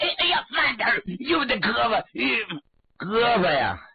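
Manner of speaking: high-pitched, pained yelping cry-out. Narrator reads a captured man's cries as he is tied with rope, crying out. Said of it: "孙七直叫唤".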